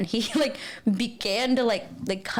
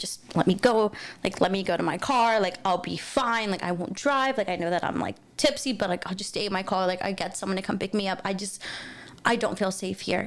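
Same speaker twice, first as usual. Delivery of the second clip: acted sobbing, tearful, pleading tone of voice. Recounting being yelled at against a wall, reenacting their own sobbing and pleading. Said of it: "just sobbing and being like".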